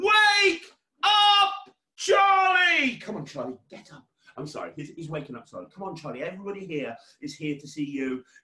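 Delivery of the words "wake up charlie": very high, very loud, all-out shouting yell. Leading the audience in calling someone to wake up, shouting as loud as possible. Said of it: "everybody shout".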